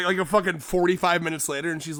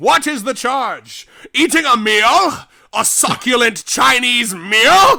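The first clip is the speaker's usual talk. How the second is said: mock-drunk man ranting, louder and higher; 5 semitones higher, 11 dB louder than usual. Retelling a wrongly arrested man's protest to police: imitating a drunk man. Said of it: "this guy is fucking wasted".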